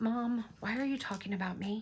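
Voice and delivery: voice of a dog. Voicing the dog in his cubby, who stares at them: speaking as the pet dog. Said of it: "He's in his cubby. Going".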